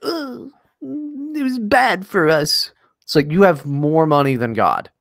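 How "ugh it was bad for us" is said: high, slow, drawn-out mock royal voice, complaining tone. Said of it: "went on Oprah and were like".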